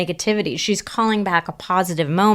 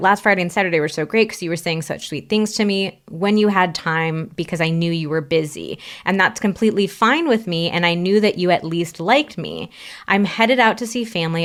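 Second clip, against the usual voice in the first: ordinary talk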